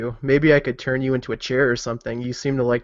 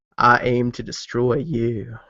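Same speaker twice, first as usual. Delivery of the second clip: eerie, slow, ringing, echoing creepy delivery. Voicing a holy character confronting an abomination on a bridge: echoing creepily. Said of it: "I say it so it kind of, like, echoes out creepily".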